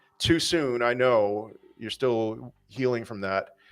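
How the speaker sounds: ordinary talk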